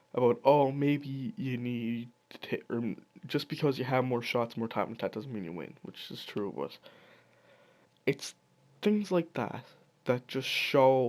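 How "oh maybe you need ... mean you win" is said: ordinary talk, nothing marked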